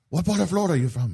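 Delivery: put-on heavy, thick French accent, quick and high, rattled off. Retelling a man asking the speaker where in Florida they're from, thick French accent. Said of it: "in a very thick uh, French accent goes".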